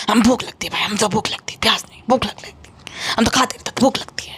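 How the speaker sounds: put-on passive-aggressive manner. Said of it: "passive aggressive टोन में बोला था".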